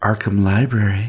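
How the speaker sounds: smooth, seductive tone. The narrator voices Evelyn answering the library phone in a sultry voice. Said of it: "a lovely, sultry voice answers".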